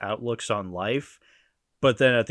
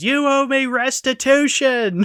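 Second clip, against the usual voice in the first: very high, very slow, very loud, drawn-out yell; 8 dB louder than usual. Quoting a cartoon line where Sally yells at Linus: imitating Sally yelling. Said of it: "Sally yells at him and goes".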